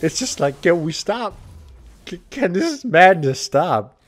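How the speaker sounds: slow speech with giggling through the words. Speaker rewatching their team's chaotic game, giggling. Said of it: "I'm giggling too much".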